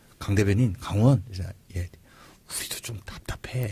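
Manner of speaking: soft, hushed, confiding whisper.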